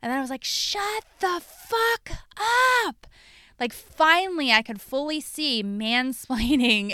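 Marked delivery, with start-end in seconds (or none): 0.4-3.1 scream, pitched higher. Retelling being talked over, then getting up: imitating her own scream. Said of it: "I just screamed at the top of my lungs".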